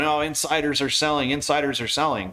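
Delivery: ordinary delivery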